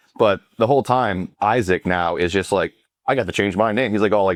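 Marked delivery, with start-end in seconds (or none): 3.1-3.9 play-acted, proud, showing-off bragging. Retelling a character's line about changing his name: imitating proud bragging. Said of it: "bragging about it, like, all proud".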